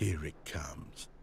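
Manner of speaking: slow, ominous, creepy whisper.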